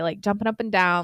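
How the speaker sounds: ordinary delivery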